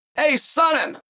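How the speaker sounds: play-acted, very high, loud shout. Retelling how Kyle yelled across to him: imitating Kyle yelling. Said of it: "And he yells to me".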